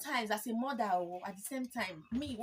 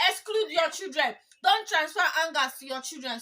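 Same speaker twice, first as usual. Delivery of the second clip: loud, raised, emphatic voice; 6 semitones higher, 9 dB louder than usual. Speaker giving advice to listeners, apologizing mid-talk; raised voice. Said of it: "Sorry, I'm raising my voice".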